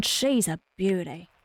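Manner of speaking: clumsy, badly done Australian accent. Quoting Steve Irwin after a gasp: bad Steve Irwin impression. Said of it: "To quote the great Steve Irwin".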